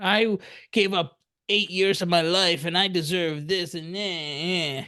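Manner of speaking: griping, whiny complaint with drawn-out "eh". Doing an impression of a dentist complaining: mock-complaining dentist. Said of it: "that's my impression of a dentist complaining".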